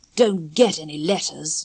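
with contempt. Narrator reads Peter answering Wendy's question, contemptuously. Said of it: "he said contemptuously".

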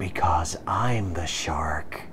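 very low, slow menacing whisper. Parodying the captain answering how she dealt with the Borg, menacing Janeway whisper. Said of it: "[Janeway, whispering menacingly:]".

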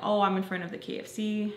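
normal talking voice

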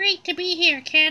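put-on very high, pitched-way-up cartoon teen voice. Donnie, just introduced as a guest, greets the kid in a high-pitched Donnie voice. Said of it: "What's wrong with your voice?".

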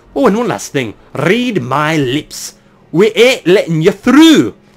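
put-on speaking with an Irish accent. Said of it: "That's an Irish accent".

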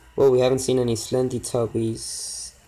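normal talking voice

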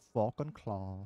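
put-on Irish accent. Showing how the line sounds with a bit of Irish: put-on Irish accent. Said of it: "throw a bit of Irish in there".

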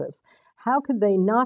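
ordinary delivery

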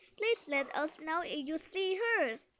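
plain reading voice

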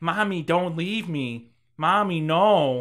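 very slow, flat, awful wooden robotic delivery. Retelling a character's line on the stairs: imitating awful robotic line delivery. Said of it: "most awful, like, robotic".

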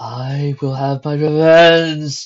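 very loud, distorted, thundering, echoing roar. As pots and pans fly, a voice in the shack calls out, echoing, distorted, thundering. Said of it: "An echoing, distorted voice thundered".

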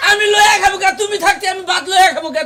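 indignant, angry protesting tone.

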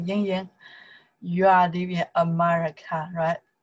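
ordinary talk

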